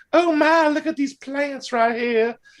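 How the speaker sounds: put-on high-pitched Southern belle accent. Imitating a female character's dubbed voice for others, in a Southern belle Paula Deen voice. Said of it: "she sounds like a Southern Belle Paula Deen".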